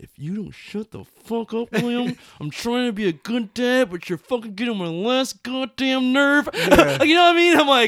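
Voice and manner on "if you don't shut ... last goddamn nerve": seething, angry voice through clenched teeth. Retelling how he answers Lil William, mock-angry through gritted teeth. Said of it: "talking through his teeth, angry".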